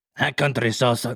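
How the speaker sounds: poorly done cartoon voice. Trying out a salsa slogan: bad Speedy Gonzales voice. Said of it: "That was like Speedy Gonzalez, but shittier".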